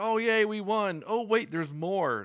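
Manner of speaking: put-on shrill, very high, loud shout. Telling how a player was surprised by the tanks, acting out his yell. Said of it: "He was yelling like".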